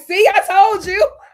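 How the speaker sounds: put-on very high, loud words spoken through laughter. Retelling how a wife came back in laughing: imitating someone laughing while talking. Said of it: "she came in laughing".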